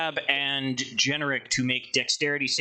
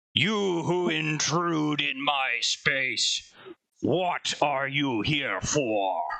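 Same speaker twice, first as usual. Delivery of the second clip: grand, commanding, disembodied calling voice. A voice from near the back wall addresses the intruders, booming voice. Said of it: "a voice booms out".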